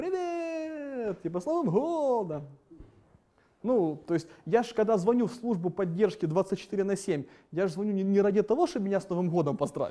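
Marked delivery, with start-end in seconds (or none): 0.0-2.5 high, tipsy, sloshed voice, words drawn out. Retelling how the support line answered his call, imitating a drunk voice. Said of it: "пьяным голосом".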